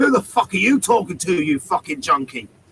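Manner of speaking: mock-angry aggressive man, yelling. Retelling how a man stomped up and answered him, mock-angry aggressive man. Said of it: "he stomps up to me and says".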